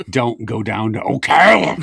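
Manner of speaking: words growled out. Retelling what someone said while shaking hands: imitating someone growling. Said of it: "He just started, like, growling".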